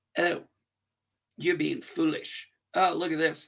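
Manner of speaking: put-on condescending tone. Retelling how she answered him in a clip: imitating a condescending tone. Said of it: "she's condescending him".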